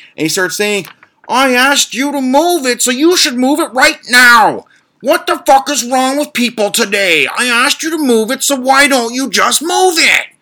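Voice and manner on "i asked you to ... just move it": very high, shrill, enraged, furious screaming rant. Retelling what a furious neighbour screamed: imitating someone screaming. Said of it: "he just starts screaming".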